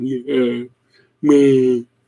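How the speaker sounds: deep voice, dropped way down, near baritone. Imitating a woman's voice when she gets like that, in a dropped near-baritone voice. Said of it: "She drops down like 3 levels to a near baritone".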